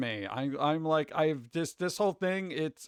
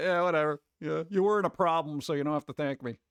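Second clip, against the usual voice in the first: mock offhand, dismissive, nonchalant tone. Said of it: "he seemed to be just very like".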